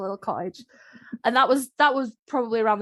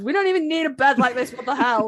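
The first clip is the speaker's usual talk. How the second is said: put-on sarcastic voice with British accent; 4 semitones higher, 4 dB louder than usual. Voicing a character from a fic: put-on sarcastic Brit voice. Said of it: "that sort of sarcastic Brit of".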